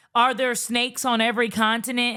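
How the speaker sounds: usual speaking voice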